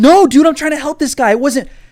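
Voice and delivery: desperate, frantic, high and loud shouting.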